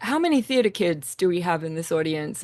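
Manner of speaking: plain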